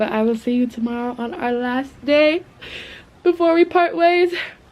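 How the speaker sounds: moved, emotion welling up. Signing off to his audience before their last day together: emotional. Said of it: "I'm getting emotional".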